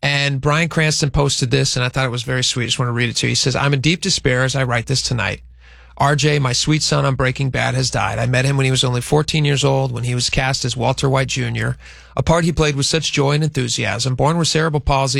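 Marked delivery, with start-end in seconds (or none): none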